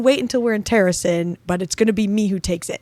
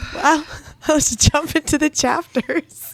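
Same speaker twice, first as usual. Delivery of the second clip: talking through laughter, higher pitch; 8 semitones higher than usual. Moving the podcast on to the chapters after a funny bit, laughing while talking. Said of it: "I'm still laughing".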